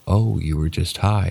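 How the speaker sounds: plain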